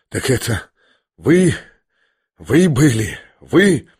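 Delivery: gasping, breathless, halting, forced-out words, very slow. Reading a novel aloud, one character finally speaks to another, gasping, forcing words out. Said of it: "задыхаясь и с чрезвычайным усилием".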